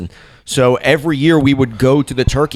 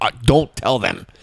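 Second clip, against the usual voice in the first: put-on paranoid, terrified, scared voice; 4 dB quieter than usual. Retelling what was said to dad after getting high: imitating own paranoid, terrified voice. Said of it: "paranoid and terrified".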